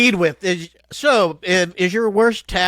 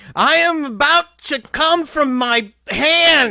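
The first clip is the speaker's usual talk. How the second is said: loud, high-pitched shout, drawn out long; 7 semitones higher than usual. Showing what gets yelled out after being asked: yelling. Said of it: "you yell it out".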